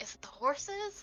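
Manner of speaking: very slow, secretive whisper. Whispering a question over to a companion: whispering. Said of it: "I'm gonna whisper over to her".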